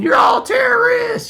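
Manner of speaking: very high, hoarse, rough shouted screaming. Retelling what counter protesters shouted at a protest: imitating protesters screaming.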